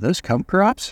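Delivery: quiet under-the-breath mutter. Retelling what a man at the post office said, under his breath. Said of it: "sort of under his breath".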